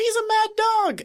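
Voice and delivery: bad, very high, drawn-out, stretched yell. Narrating a shootout, the storyteller voices Barney's line, a bad Barney impression. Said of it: "The Barney impression is getting worse".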